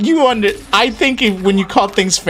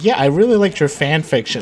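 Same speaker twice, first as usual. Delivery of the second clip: ordinary talk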